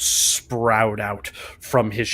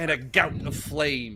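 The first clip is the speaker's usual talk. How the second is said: usual speaking voice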